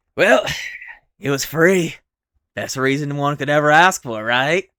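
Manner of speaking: loud, smug, cocky gloating goblin voice. A goblin, asked why they camped here, answers smug, pleased with himself. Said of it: "That's where all the gobbies are. / [name] smiles".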